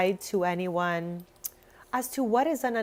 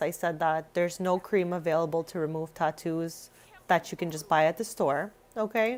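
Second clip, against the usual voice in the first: ordinary delivery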